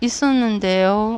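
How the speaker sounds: hesitant, unsure, mumbled, blurred trailing 는데요. Demonstrating a weak, unconfident answer with a blurred sentence ending: hesitant, trailing blurred ending. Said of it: "어미를 흐리지 않고 ... 사람 되게 무기력해 보이죠? 자신감 없어 보이죠? ... 거짓말하는 것 같잖아요".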